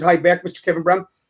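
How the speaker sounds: plain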